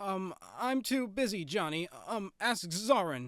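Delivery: frightened little voice, high and slow. Reading a story aloud, a character refusing a request: frightened voice. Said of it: "said Zip in a frightened voice".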